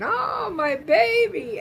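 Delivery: put-on very high, loud panicked cry, New York accent. Retelling a mother hearing that her son is in the hospital: imitating Franny freaking out, New York accent. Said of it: "she starts freaking".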